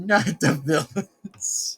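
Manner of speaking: slow drawl, laughing through the words.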